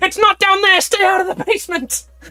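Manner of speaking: sudden, very high, shrill, loud scream. Narrating a game, voicing the goddess as a guard heads for the basement, screaming. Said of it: "the goddess just immediately screams".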